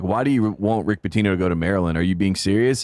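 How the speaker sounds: plain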